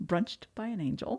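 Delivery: hushed, very quiet, bone-dry, flat deadpan delivery. Describing a hotel brunch with psychic mediums, speaker gives its name deadpan. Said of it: "Very deadpan performance".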